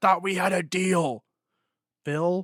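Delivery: put-on all-out high, loud scream. Retelling a movie scene where a character gets a call and screams: imitating a scream. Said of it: "he screams".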